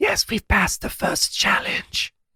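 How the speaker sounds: very high, hushed whisper, echo-like. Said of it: "why are we whispering?".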